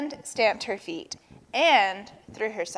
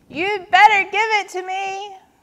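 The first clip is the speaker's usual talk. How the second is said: shrieking, very high-pitched screaming; 10 semitones higher, 4 dB louder than usual. Narrator reads a character's threat in the story, screaming. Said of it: "screamed Turtle".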